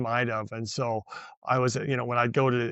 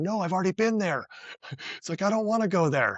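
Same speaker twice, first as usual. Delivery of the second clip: mock yell, raised and pitched up; 7 semitones higher than usual. Retelling being lost on a course road and shouting to people above: imitating yelling at people. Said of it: "I'm yelling at 'em".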